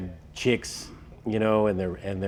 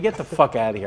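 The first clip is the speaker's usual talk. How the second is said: ordinary talk, nothing marked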